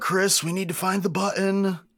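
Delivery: very high-pitched, loud shout. Voicing Pip calling to another character: Pip yelling. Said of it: "Pip's gonna yell".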